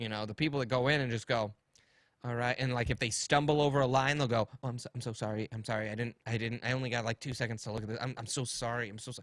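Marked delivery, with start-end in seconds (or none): 4.6-9.2 mock desperate, frantic tone, much quieter. Giving casting advice, acting out actors who keep saying sorry: imitating a desperate apologizing actor. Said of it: "Don't go in there and apologize".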